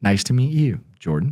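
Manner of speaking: drained, barely-there voice with no energy at all. Retelling the older man's reply to his greeting: imitating someone with hardly any energy. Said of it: "hardly any energy".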